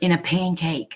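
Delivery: hushed, confiding soft stage whisper. Retelling what a woman would half-whisper after yelling across the room: imitating a half-whisper. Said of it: "Then she would whisper".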